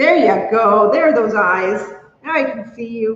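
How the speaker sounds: ordinary talk, nothing marked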